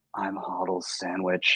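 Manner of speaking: close, hushed stage whisper. Retelling a stranger leaning over at a conference: imitating a half-whisper. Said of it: "he whispers in my ear".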